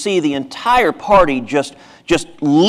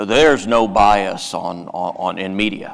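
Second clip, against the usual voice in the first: rough gravelly voice, much lower, slower; 8 semitones lower, 4 dB quieter than usual. Mocking people who argued on TV about media bias, gravelly voice. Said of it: "argue in a gravelly voice".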